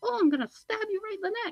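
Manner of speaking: very high, light, playful little doll voice. Speaker imagines Chucky threatening someone, high playful Chucky voice. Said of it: "that high playful voice".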